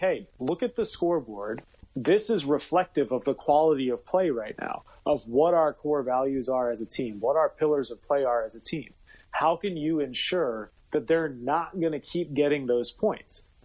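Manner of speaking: normal talking voice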